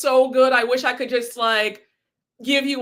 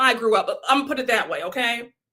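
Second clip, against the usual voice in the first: normal talking voice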